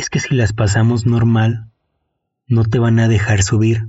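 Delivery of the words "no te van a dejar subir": ordinary talk, nothing marked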